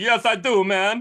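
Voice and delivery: loud, fake, put-on Jamaican accent. Retelling a guy's story, quote him in a put-on Jamaican accent. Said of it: "coming up with the Jamaican accent".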